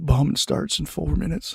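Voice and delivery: loud creepy voice. Imagining the voice announcing a Cold War bombing: Bill Clinton voice. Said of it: "hearing that voice going".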